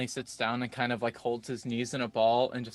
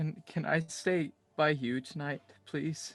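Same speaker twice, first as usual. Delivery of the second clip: quiet, tearful, crying voice, higher; 4 semitones higher than usual. A character answers someone who is reassuring him, crying silently while pleading. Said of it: "he's crying real silently too".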